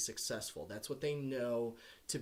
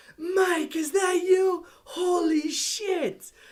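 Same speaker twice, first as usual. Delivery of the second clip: put-on strong, very high, shrill, loud Italian accent; 15 dB louder than usual. Retelling meeting a man outside a club, voicing him in a fresh-off-the-boat Italian accent. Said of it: "he's straight off the boat Italian".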